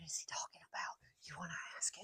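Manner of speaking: soft, hushed whisper. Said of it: "sitting right there whispering".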